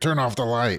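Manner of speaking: put-on high-pitched yell. Retelling a brother yelling in his sleep at the moon: imitating someone yelling. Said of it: "but he's yelling at the moon".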